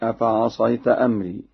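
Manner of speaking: ordinary talk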